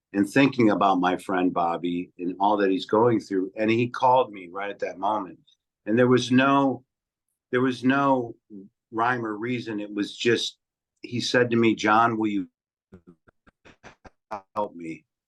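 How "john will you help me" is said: imitated, put-on robotic voice. Speaker retelling a friend's phone call: imitating Bobby's robotic voice. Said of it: "In his now voice, which is kind of robotic".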